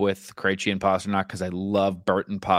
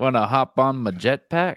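put-on suave spy voice, higher; 5 semitones higher than usual. Quoting a movie scene where a character does a James Bond impression. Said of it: "he's doing his James Bond impression".

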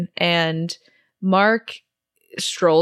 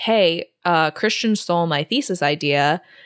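ordinary talk

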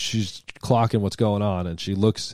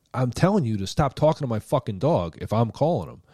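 heated, angry yelling with cursing; 3 semitones higher than usual. Recounting yelling at a man who came closer, retelling a yell. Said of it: "I'm yelling at this guy".

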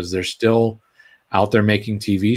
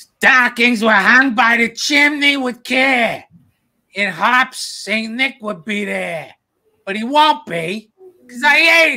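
loud, very high-pitched, belted shouting voice; 4 dB louder than usual. Reading Twas the Night Before Christmas aloud, as asked, in a loud Big Mean Carl voice. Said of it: "Should I read it like Carl? ... Be loud".

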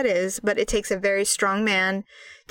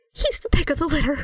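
put-on high voice catching with emotion, choked up; 6 semitones higher than usual. Retelling a talk with her daughter about her dad, imitating own choked-up voice. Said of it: "And then I got real choked up".

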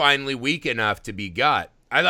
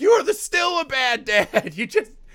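shrill, very high, dragged-out scream; 10 semitones higher than usual. Describing watching a show, re-enacting screaming at the tv. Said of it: "I'm just screaming at the TV like".

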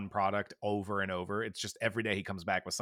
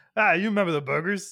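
very high, loud, shrill voice with a bubble in the throat; 10 semitones higher, 9 dB louder than usual. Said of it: "I'm finding that Bob voice".

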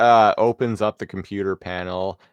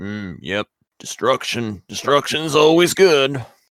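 put-on robot character voice; 4 semitones higher than usual. Quoting the character's line in an impression that's not on point: Rhinox impression. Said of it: "my Rhinox is not, is not on point right now".

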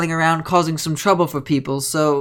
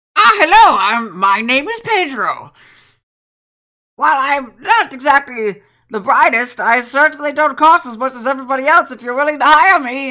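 put-on older gentleman's voice, pitched up; 8 semitones higher, 4 dB louder than usual. Describing an older gentleman who introduces himself and offers to be hired; Pedro impression. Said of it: "He's sitting there and he goes".

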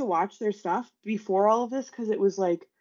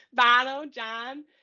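harsh, exaggerated, cartoonish Chicago accent, much higher; 3 semitones higher than usual. Describing the mother's family, the speaker mimics their harsh Chicago accent. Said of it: "that's how they all sound".

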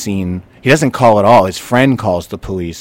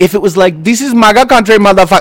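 put-on Nigerian accent on the words; 11 semitones higher, 5 dB louder than usual. Quoting the slurs a man said he heard: Nigerian accent. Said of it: "that's my Nigerian accent".

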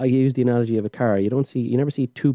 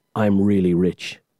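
mock-deadpan flat delivery, much lower pitch; 4 semitones lower than usual. Recalling the Flash asking Batman his superpower, deadpan Batman line.

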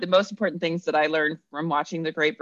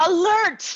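fake urgent announcer voice, higher and louder; 4 dB louder than usual. Reading a co-host's written recipe note aloud: mock alarm announcement. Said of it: "I have to say this the way you wrote it out".

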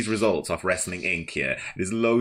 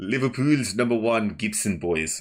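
failed put-on accent, oddly sliding South African; 3 semitones higher than usual. Jokingly hyping a tag team: botched put-on accent, went South African. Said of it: "That went South African".

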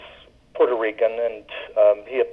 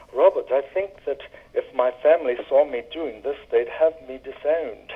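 put-on very proper, refined, correct English accent; 3 semitones higher, 5 dB quieter than usual. Retelling what Eva said after drinking beer from the bottle: very proper English accent. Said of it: "she said in her very proper English accent".

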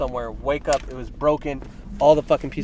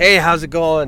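booming, very loud, cheery and upbeat; 2 semitones higher, 8 dB louder than usual. Retelling greeting a customer at Subway: imitating own cheery greeting. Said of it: "I'm all cheery".

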